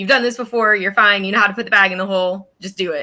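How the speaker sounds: ordinary talk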